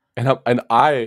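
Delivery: ordinary delivery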